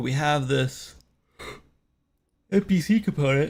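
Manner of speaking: talking through a yawn. Developer streaming work on their game, talking through a yawn. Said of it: "just yawning".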